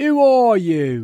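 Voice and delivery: angry loud voice. Someone at an upstairs window answers a knock at the door: angry. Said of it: "said the face angrily".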